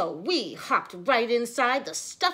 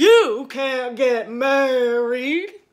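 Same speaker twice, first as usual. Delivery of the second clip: very loud, slightly scary bug voice; 9 dB louder than usual. Reading a story aloud, voicing the stink bug in a slightly scary voice. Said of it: "the scary voice was coming from the stink bug".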